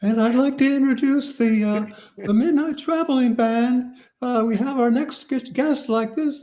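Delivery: put-on very high, unbroken pre-puberty young voice. Retelling introducing a band on the show: imitating own high pre-puberty voice. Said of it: "I was talking like this".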